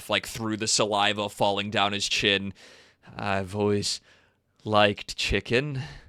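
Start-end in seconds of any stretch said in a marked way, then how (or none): 3.2-5.8 low, menacing, drooling under-the-breath murmur. A game narrator voices a smiling man who murmurs under his breath. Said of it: "he murmurs under his breath".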